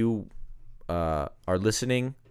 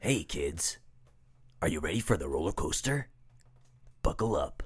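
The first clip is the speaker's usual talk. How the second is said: low theme-park ride announcer patter; 4 semitones lower, 5 dB quieter than usual. Performing a roller coaster voiceover: greasy roller coaster voiceover. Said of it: "See, you got the job".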